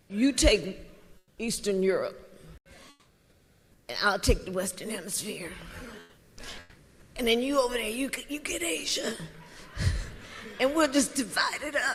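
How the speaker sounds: very quiet, murmured, low-key mob boss voice. Speaker saying he acts like a mob boss, then doing a mob boss accent as Donald Trump. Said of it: "She did a mob boss accent".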